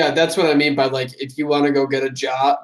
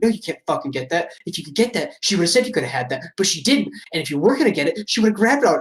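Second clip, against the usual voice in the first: mock muttering under the breath, higher pitch; 3 semitones higher than usual. Retelling how someone answered other people's kids while grocery shopping, imitating muttering under breath. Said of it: "Mike would answer for them under his breath".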